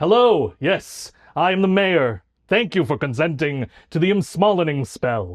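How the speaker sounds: put-on deep, low gnome voice. Playing the gnome mayor welcoming newcomers, in a deep gnome mayor voice. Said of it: "your voice is so deep down here".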